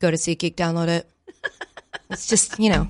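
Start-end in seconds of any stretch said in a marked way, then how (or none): 0.0-1.1 put-on monotone coach voice, lower, quieter. Imagining an ad read by Bill Belichick, the speaker does a monotone Bill Belichick impression. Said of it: "so monotone".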